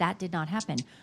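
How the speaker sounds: put-on level-headed, calm, firm tone. Comparing two people's denials, imitating Katie, level-headed and firm. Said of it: "Katie is level-headed".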